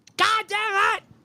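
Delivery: put-on very high, shrill, oblivious hollering. Acting out how someone who went deaf keeps talking: imitating own yelling. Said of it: "just yelling 'cause you don't fucking know".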